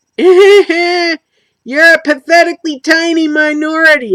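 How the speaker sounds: slow, high cartoon voice. Voicing a stereotype mid-talk, in a Peter Griffin voice. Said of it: "I'm doing my Peter Griffin voice there".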